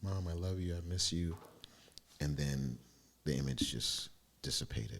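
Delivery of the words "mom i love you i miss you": acted-out speech through tears, crying. Retelling seeing a vision of mom: reenacting own crying words. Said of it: "And I'm crying".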